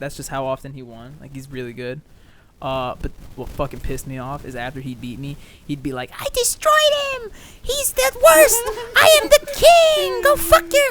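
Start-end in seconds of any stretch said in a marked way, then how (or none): 6.2-10.9 put-on very high, very loud child's voice. Recounting a kid gloating after beating him, mimicking him: high-pitched kid voice. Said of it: "He had like one of those really high pitched voices".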